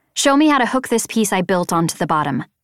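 ordinary delivery

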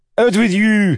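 very high, loud, booming chef voice. A narrator reads a man's line to the assistant cooks, in the chef's voice. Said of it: "he said to them in the chef's voice".

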